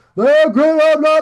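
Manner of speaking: mock sarcastic, loud and high.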